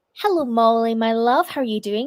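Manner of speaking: ordinary delivery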